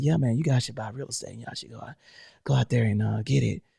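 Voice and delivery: smooth radio voice, deep, soft and creaky. Speaker shows how he would sound on here, in a Quiet Storm radio voice. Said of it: "I sound like the Quiet Storm".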